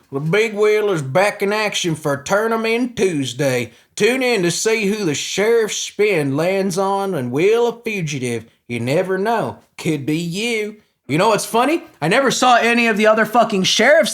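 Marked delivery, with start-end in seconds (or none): 0.1-10.8 put-on country sheriff accent, gone all in. Voicing a Brevard County sheriff's Wheel of Fugitive promo in a country accent. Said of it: "I gotta get the country accent for real".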